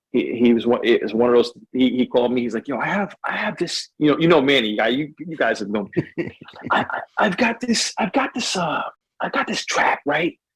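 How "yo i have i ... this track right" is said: soft, cool, whispery murmur, pitched up. Recounting a producer's call about a new track, imitating Manny's whisper. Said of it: "Why are you whispering so much to me?".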